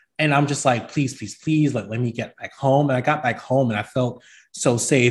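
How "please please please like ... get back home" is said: put-on shaky, desperate pleading voice. Retelling driving home shaking after a police stop: retelling own shaky desperate plea. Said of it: "shaking and hoping that I don't get pulled over".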